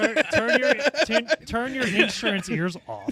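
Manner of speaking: high-pitched, laughing mock pleading tone.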